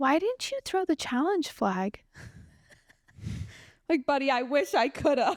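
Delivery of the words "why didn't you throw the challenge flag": put-on high, slow little kid voice. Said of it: "He goes".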